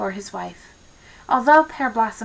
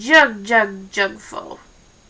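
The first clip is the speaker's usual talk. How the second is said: rough, hoarse, rumbling frog croak. A voice answers from the tall jar as the girl asks for help: hoarse, rumbling voice. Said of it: "rumbled a hoarse voice".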